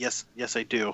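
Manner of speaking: put-on thick Egyptian Arabic accent. The narrator voices a man being held, answering the players, in a heavy egyptian accent. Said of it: "in a very heavily accented Egyptian uh".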